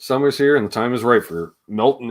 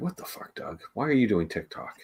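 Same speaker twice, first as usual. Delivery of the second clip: play-acted heavy disapproval, strongly scolding tone; 11 dB quieter than usual. Retelling own earlier remark about someone doing tiktok: imitating a disapproving tone. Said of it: "So disapproving".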